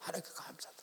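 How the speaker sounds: soft, hushed, unvoiced whisper.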